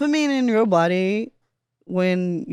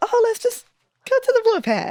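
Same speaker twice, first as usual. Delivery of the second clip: breezy, light mock decisiveness. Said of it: "we were like".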